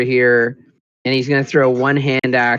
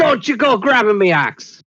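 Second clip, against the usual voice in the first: very high, shrill orc voice shout; 9 semitones higher than usual. Playing a character yelling at an orc in a fight: yelling in character. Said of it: "he yells".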